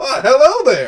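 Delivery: squeaky, very high, loud gnome voice. The narrator voices the pilot waiting on the tarmac, gnomish pilot voice. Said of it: "your gnomish pilot and flight attendant waiting".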